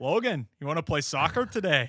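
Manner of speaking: imitated Scottish accent. Telling a story about the coach; imitating Bill Fields's Scottish accent. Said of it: "he's a Scottish guy".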